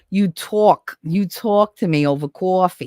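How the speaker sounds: heavy New Jersey accent, laid on, slow and thick. Showing how to say a line right: thick Jersey accent. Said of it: "You want the Jersey accent?".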